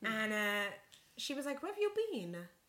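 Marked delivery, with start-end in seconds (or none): 1.6-2.3 rough put-on Turkish accent, very high-pitched. Retelling what the waxer said on seeing her: imitating a Turkish accent. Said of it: "That wasn't a very good accent".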